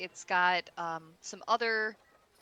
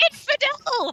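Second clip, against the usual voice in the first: very high, loud little talking-chicken voice; 6 dB louder than usual. A game master voices a chicken in a basket, talking chicken voice. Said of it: "You see like one of them look at you".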